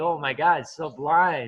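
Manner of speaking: joking, mock gushing, overblown. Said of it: "so you would say it like a joke".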